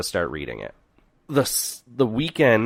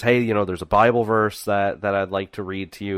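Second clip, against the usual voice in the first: normal talking voice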